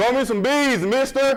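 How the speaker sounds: very high, loud screaming.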